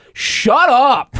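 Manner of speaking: sharp, loud, shrill outburst, very high. Retelling what he and Sean said to loud talkers in a packed theater: loud. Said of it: "Just like loud".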